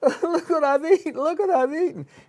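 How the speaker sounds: boo-hooing, very high sobbing, crying voice. Retelling a joke where a pregnant wife eats pie: imitating a crying wife. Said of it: "She's crying".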